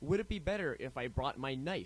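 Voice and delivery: ordinary talk, nothing marked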